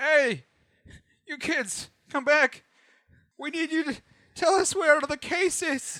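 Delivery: very high, drawn-out calling voice. Voicing a guard who reaches for the fleeing kids: GM voicing a guard. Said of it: "He's like".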